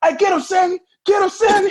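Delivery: very high, loud cheering shout. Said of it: "[name] walked in like".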